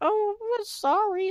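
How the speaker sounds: very high, odd, strange voice, pitch way up. Retelling how a girl apologized after being told off, imitating Platypus Girl's voice. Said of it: "Like she talks like this".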